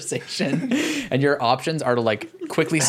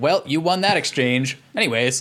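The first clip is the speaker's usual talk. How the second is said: put-on robot-like voice. Retelling what a game servant says after an exchange: imitating a robotic voice. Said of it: "truly like a robot".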